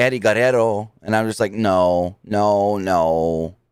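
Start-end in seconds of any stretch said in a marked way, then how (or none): 0.0-0.9 "Guerrero" said with put-on Mexican Spanish pronunciation. Retelling saying a wrestler's name: mexican accent on the name. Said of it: "Tried to just say it with the Mexican accent".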